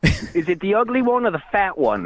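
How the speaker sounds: clearly fake, put-on British accent. Calling in to challenge the hosts to a fight: put-on British accent. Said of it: "To a British accent".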